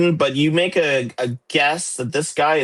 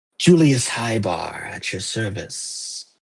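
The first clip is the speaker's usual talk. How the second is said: slow, slimy, smarmy character voice; 5 semitones lower than usual. Voicing a character with a slimy grin who greets the party: slimy character voice. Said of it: "slimy grin".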